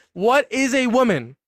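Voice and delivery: screaming. Repeating a question at a debate opponent to force an answer: screaming. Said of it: "We can scream and talk".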